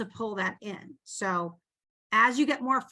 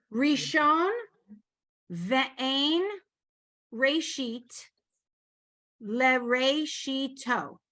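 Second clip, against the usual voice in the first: very slow, sounding out each syllable; 3 semitones higher than usual. Teaching a student to pronounce a phrase, syllable by syllable. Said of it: "Just go syllable by syllable".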